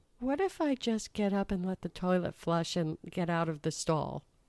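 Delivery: soft, small, tiny wee voice. Retelling a woman speaking from behind the stall door, in a small little voice. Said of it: "I hear this little voice from beyond the door going".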